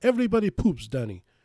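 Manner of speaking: put-on European accent. Recalling a former web agency client, the speaker does his line: imitating Harry's European accent. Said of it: "He had like an European accent".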